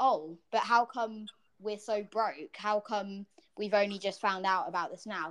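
normal talking voice

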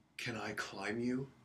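slow, hushed half-whisper, close in. Retelling how a stranger hugged them at the door: imitating a half-whisper. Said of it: "whispers in my ear".

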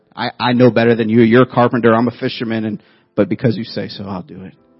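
normal talking voice

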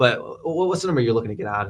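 rushed, hurried, unsure, unrelaxed delivery. Showing how a tense, unconfident offer sounds: hurried, less relaxed tone. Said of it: "if I'm sitting here talking like this".

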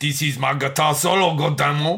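terrible, botched, put-on Creole accent. Riffing on an imagined guitarist on horseback, in a terrible Creole accent. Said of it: "Terrible Creole accent".

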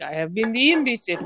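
put-on British accent with fake French layered over. Quoting a character's proud moment of realizing: fake French-British accent. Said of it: "I apologize for my fake French on top of fake British accent".

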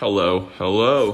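muffled speech through covered mouth. Greeting listeners at the start of an episode: muffled, mouth covered. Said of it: "I was covering my mouth".

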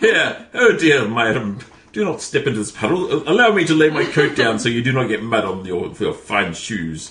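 high, loud, swooping, polite, courtly badger voice. Acting out a made-up show's hero: honorable badger character voice. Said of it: "Oh, what an honorable badger".

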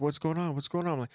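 very high, frantic, panicked voice. Retelling how Mom reacted to a gaming prank, imitating mom freaking out. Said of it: "she's just freaking out".

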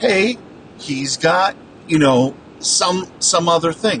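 ordinary delivery

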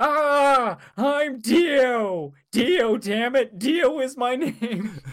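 put-on very slow, high, drawn-out theatrical death scream. Acting out Dio's final lines, imitating Dio screaming. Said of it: "ending lines for Dio is just him screaming".

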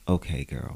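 patronizing, passive-aggressive put-down, voice kept down. Showing how they read someone without raising the voice: put-on condescending tone. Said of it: "It's very condescending".

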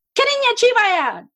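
very high, loud shouting in Chinese. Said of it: "it's so loud".

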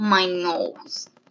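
nasally voice, through the nose. Acting out a routine with her when upset, the speaker answers in a nasally voice. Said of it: "Just like this nasally".

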